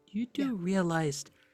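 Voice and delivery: speaking in a whisper. Voicing a character leaning over to Lucy: whispering.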